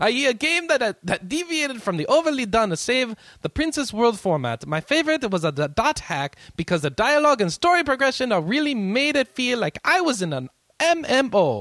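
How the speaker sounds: bad put-on Italian accent, very high, loud. Reading a listener's question aloud in a horrible italian accent. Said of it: "my Italian accent is horrible".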